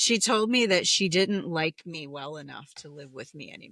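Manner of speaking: usual speaking voice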